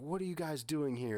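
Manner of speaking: mock frantic, alarmed, screaming woman's voice. Retelling a story, the speaker acts out a woman screaming at a man. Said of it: "she's just screaming at him like".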